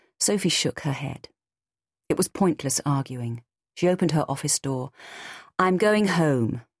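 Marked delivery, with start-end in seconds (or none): 5.6-6.6 steady, decided, firm and resolute voice. Sophie, opening her office door, speaks to the other woman: firm. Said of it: "she said firmly".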